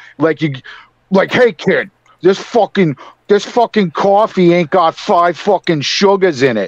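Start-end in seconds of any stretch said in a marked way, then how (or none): 1.3-6.7 mocking Boston accent, higher pitched. Describing a masshole: imitating a typical masshole. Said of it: "the typical masshole".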